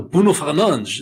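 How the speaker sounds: put-on overdone Portuguese accent. Mocking hosts of a Canadian Portuguese soccer podcast, with an overpronounced Portuguese name. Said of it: "they overpronounce the word so badly".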